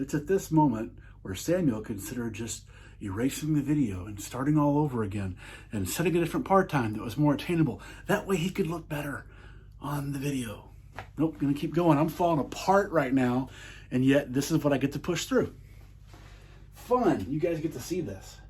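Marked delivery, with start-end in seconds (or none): 0.0-10.7 third-person storyteller narrator voice. Struggling through his video, the speaker narrates himself in third person, narrator voice. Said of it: "narrator voice".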